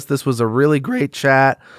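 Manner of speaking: cracking voice. Podcast host thanking the audience at the end of the show, voice cracking. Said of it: "my voice just cracked".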